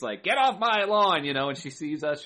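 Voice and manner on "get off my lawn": put-on grumpy old lady voice, higher and louder. Retelling how the parking lady chased people away: imitating a crotchety old lady. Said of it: "turned into this, like, crotchety old lady".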